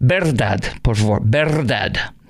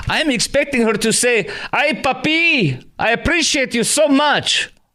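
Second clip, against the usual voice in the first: very high-pitched, put-on Spanish accent; 12 semitones higher than usual. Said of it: "how I describe her accent".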